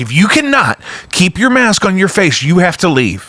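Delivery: high-pitched, scolding scream. Retelling being woken at four a.m. by his wife: imitating wife screaming. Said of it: "she's screaming at me".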